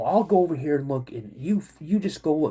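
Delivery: plain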